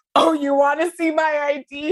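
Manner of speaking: play-acted, cocky, sassy, dumb drunk confidence. Retelling a reply to a bartender asking for ID: imitating cocky drunk confidence. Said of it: "dumb, like, arbitrary drunk confidence".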